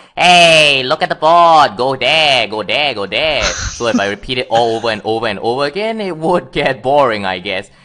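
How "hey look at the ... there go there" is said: character voice, pitched high. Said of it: "a high-pitched voice".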